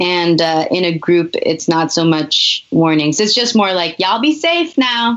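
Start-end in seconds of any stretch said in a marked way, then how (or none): 4.0-5.2 put-on pitched-up Southern US accent with a drawl. Quoting people met while riding through the South: Southern accent. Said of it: "you've nailed the accent as well".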